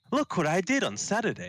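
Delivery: very high, cheery, sing-song text-to-speech voice. Complaining about an AI voice she cannot stand, doing a cheery TikTok AI voice imitation. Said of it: "it's like really cheery".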